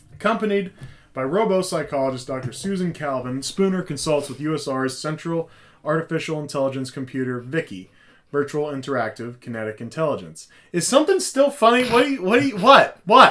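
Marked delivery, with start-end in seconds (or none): 10.7-13.3 very high, booming, shrill, stern scolding schoolteacher voice. Asking the others, who keep laughing, what is still funny, sounding like a teacher. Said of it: "you sound like a fucking teacher".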